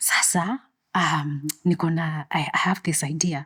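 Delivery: put-on whisper. Retelling approaching the security guards with an idea: imitating own whisper. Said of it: "and I'm whispering".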